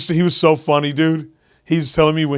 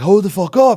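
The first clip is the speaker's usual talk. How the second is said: put-on, acted-out high-pitched yell; 5 semitones higher, 4 dB louder than usual. Telling how a roadie reacted to his backstage begging, retelling a roadie's yell. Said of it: "he yelled at me".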